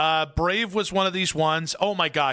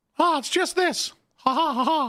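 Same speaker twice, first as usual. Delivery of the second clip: put-on cartoon-style chuckle; 10 semitones higher than usual. Showing the other speaker a Mickey Mouse voice. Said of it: "what's your Mickey Mouse voice?".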